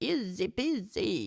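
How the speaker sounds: put-on Italian accent on English words. During a French lesson on where people live, an aside in Italian accent speaking English. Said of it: "with my Italian accent speaking English".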